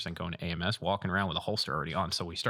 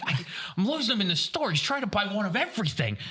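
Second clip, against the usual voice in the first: put-on yelling in a very high, shrill voice; 14 semitones higher, 4 dB louder than usual. Retelling a phone call about beer and a lost kid: imitating Richie yelling. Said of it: "And he's yelling".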